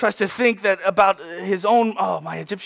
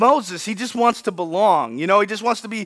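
ordinary delivery

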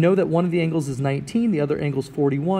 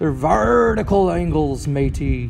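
hammy put-on pirate voice. Geometry class answer about vertical angles: put-on pirate voice. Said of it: "I hope you're saying it in your best pirate voice".

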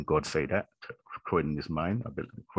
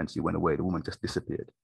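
ordinary talk, nothing marked

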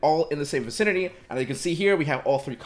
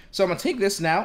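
voice cracking; 3 semitones higher than usual. Walking through steps with layers, voice cracking. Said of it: "That was a voice crack".

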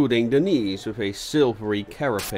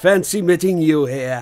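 taunting, mocking, loud, high-pitched tone; 6 semitones higher, 6 dB louder than usual. A driver approaches a constable he recognizes and greets him, mocking. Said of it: "he said mockingly".

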